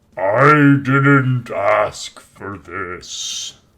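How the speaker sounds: loud protesting moose bellowing voice. Narrating a game, voicing the attacked moose: bellowing moose voice. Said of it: "as it bellows out".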